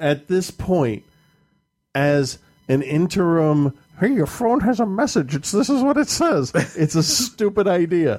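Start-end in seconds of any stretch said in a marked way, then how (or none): 4.0-5.3 high, squeaky cartoon mouse voice. Speaker mocks a phone announcing a message, in a Mickey Mouse-like voice. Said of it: "Why did you sound like Mickey Mouse?".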